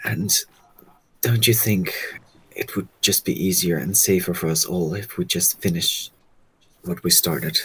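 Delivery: whispering. Speaking in character to a friend about finishing the job: whispering. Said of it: "I'm gonna whisper to you".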